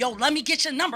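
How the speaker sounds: put-on aggressive, crude tone. Retelling what a guy said from his car window: imitating a cursing catcaller. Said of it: "he was just cursing".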